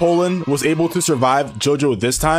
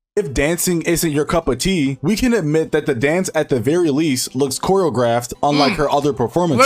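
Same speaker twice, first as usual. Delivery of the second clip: usual speaking voice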